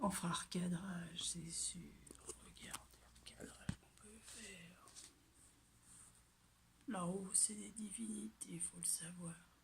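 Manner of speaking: soft, unvoiced whisper.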